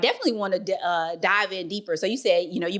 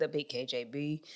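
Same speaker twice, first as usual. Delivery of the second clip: very soft, very slow, deep, hushed dropped voice; 4 semitones lower, 12 dB quieter than usual. Host naming the big KJB to listeners, in a dropped voice. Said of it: "you see, how I dropped my voice there".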